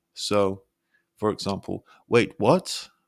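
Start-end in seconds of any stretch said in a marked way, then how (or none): 2.0-2.8 "what" shooting up sharply in pitch, disbelieving. Showing surprise or shock: sharp pitch rise on what. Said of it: "Your pitch rises sharply on what?".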